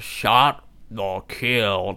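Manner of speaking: put-on cool, laid-back character voice. Answering a prosecuting lawyer's question, in a cool Jeff Bridges voice. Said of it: "like that in his cool voice".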